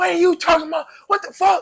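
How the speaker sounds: very high, shrill scolding holler. Retelling how mom reacted to trouble: imitating mom's high-pitched yell. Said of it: "That high pitch".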